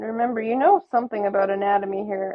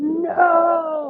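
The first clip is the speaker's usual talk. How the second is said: anguished monstrous wail, high, drawn-out crying shout; 7 semitones higher than usual. Narrating a character bursting through the door as the listener's throat is slit, monstrous shout. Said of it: "his voice sounds more like Monster than James".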